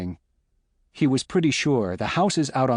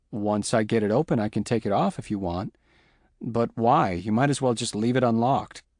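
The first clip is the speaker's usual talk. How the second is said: plain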